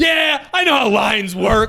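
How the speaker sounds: furious, fed-up, angry shouted voice. Retelling a woman in a bakery line: imitating an angry woman. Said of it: "and she's angry, that angry".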